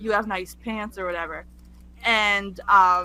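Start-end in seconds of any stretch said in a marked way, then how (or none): none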